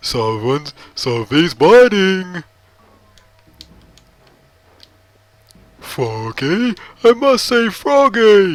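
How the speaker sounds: high, slow, loud, swooping character voice. Speaker showing how easy Big's voice is to do, doing a Big impression. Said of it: "That was my Big impression".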